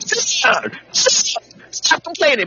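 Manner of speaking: play-acted, very high-pitched, drawn-out scolding. Acting out yelling at a kid who complains: imitating yelling at a kid. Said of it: "when you're yelling at your kid and you're like".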